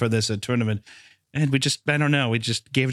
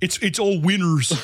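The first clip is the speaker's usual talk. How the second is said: put-on Danish-sounding voice, higher pitch; 6 semitones higher than usual. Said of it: "He's like".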